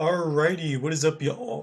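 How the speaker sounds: cracking voice. A streamer opens a live stream, greeting viewers: voice cracking. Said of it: "immediately start with a voice crack".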